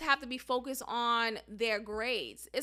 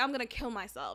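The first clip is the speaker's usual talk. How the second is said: put-on flippant, offhand tone, much quieter; 4 dB quieter than usual. Speaker imitates a student of hers saying it casually, mock-flippant, offhand. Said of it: "she says it so flippantly".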